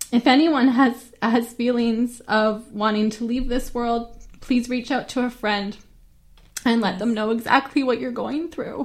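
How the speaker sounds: choked up, voice catching with emotion. Urging anyone wanting to leave this world to reach out, choking up. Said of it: "I'm choking up here".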